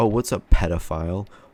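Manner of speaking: ordinary talk, nothing marked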